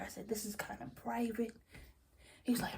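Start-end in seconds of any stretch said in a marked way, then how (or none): 0.3-1.5 much quieter whispering. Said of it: "So I was whispering to him".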